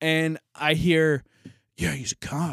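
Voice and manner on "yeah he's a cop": acted muttering under breath, much quieter. Retelling overhearing a man downstairs talking to someone, retelling an under-breath remark. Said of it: "under his breath".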